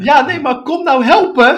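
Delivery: shrieking, very high, very loud scream. Retelling an old woman demanding help with her slippers: imitating someone screaming. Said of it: "ze begon echt te schreeuwen".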